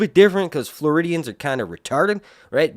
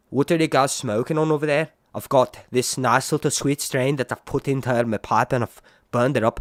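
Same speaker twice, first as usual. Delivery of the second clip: put-on Liverpool Manchester northern English accent; 3 semitones lower, 6 dB quieter than usual. Demonstrating the accent by acting out a call to the Tittensers: Liverpool Manchester accent. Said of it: "that's kind of like a Liverpool Manchester accent".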